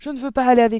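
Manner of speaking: abrupt, sudden, very loud, high outcry. Talking with a woman in a garden on a warm evening, crying out abruptly. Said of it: "s'écria brusquement Mathilda".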